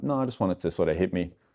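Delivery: ordinary delivery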